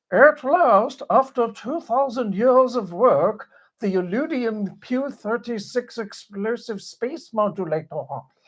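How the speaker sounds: high-pitched cartoon alien voice. Asked to try it, the speaker does a Marvin the Martian voice. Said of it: "Can you do it? Try it".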